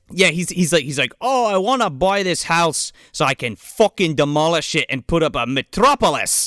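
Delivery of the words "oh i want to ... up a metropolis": put-on terrible Irish accent slipping into a Scottish accent. Quoting a movie character who wants to demolish a house: bad Irish accent turning Scottish. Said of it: "I do a terrible Irish accent, so you're getting Scottish".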